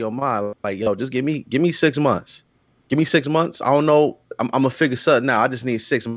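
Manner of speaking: ordinary delivery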